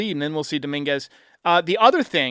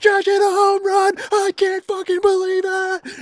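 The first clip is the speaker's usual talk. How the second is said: put-on, wild, very high, overjoyed excited screaming; 14 semitones higher than usual. Recounting celebrating a Judge home run at home, the speaker is retelling excited screaming. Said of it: "I was just going absolutely nuts".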